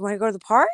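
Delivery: calling out loudly. Retelling asking the dog about going to the park: imitating a raised voice to a dog. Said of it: "And I raise my voice".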